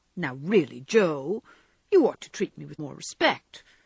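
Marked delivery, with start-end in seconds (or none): none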